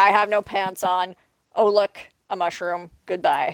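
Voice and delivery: ordinary talk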